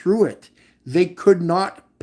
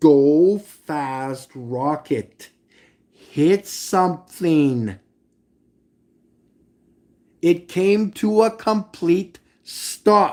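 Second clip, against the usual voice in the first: slow, deliberate, word by word delivery. Addressing the Globies, speaking slowly. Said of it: "I'm going to say this slow".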